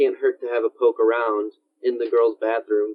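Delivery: ordinary talk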